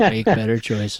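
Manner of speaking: bone-dry, matter-of-fact, deadpan, no reaction. Repeating how a man answered the question about his inner circle, imitating a deadpan answer. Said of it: "He was like deadpan".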